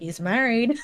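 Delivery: muttered quietly under the breath. Retelling what someone else said about the character, muttered under breath. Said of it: "under her breath".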